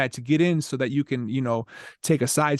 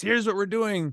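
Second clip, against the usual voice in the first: put-on enthusiastic, pitched-up fake excitement; 8 semitones higher than usual. Describing plans, the speaker slips into what they call their exciting voice: mock excited voice. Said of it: "in my exciting voice".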